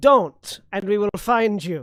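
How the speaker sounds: shouting. Demanding that enemies surrender before an intimidate roll: yelling. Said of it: "he's yelling that".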